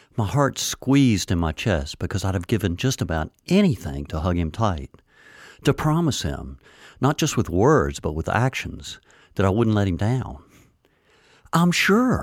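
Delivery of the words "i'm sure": resolute, firm, very high-pitched. The narrator assures a man they won't let him down, firmly. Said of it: "I said firmly".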